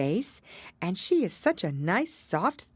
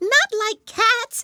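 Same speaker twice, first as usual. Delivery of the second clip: impassioned, shrill, very high, very loud mouse-like cry; 8 dB louder than usual. Narrator reads the mouse's reply to an apology, in a shrill, passionate mouse voice. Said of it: "cried the mouse in a shrill, passionate voice".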